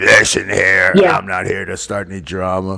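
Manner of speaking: just-woke-up, straight-out-of-bed morning voice. Imitating another speaker who sounded like just woke up: Cherry just-woke-up voice. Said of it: "sounds like Cherry in the morning when he just woke up".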